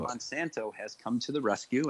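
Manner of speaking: ordinary delivery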